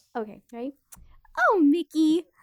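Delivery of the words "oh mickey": called out high and very loud. Doing an impression after being asked for one: Minnie Mouse voice. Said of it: "I can do a Minnie".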